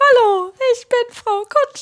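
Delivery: very high, squeaky cartoon voice. Someone starts talking like Mickey and introduces herself: Mickey Mouse voice. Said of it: "wie Mickey zu reden. Mickey Maus".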